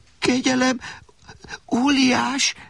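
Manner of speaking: very high, trembling, quavering voice. Alexander speaks to the giant holding him in his palm, trembling voice. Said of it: "tette hozzá remegő hangon Alexander".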